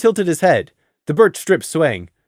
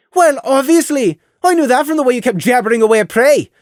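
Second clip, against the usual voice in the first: put-on high-pitched, loud Irish or Scottish accent; 8 semitones higher, 5 dB louder than usual. Lilly answers someone who kept talking to Prey, Irish/Scottish accent as Lilly. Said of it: "a Irish/Scottish accent was right for Lilly".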